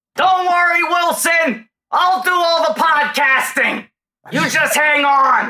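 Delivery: very high, slow, drawn-out yell. Doing an impression, telling Wilson not to worry: Tom Hanks yell. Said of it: "That's like an okay Hanks yell".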